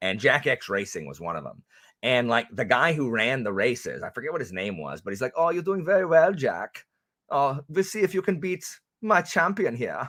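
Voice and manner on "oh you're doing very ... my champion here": high, put-on German accent. Retelling what the guy who ran the races in a game said, German accent. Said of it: "so my German accent is literally".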